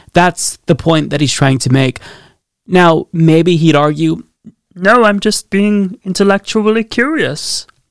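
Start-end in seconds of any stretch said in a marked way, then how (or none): 4.7-7.6 weak, poorly done put-on cartoon frog puppet voice. Imitating the tweet author's possible defense in a Kermit the Frog voice. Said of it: "the best Kermit the Frog that I could muster".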